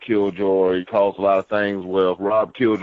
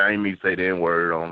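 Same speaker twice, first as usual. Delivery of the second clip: usual speaking voice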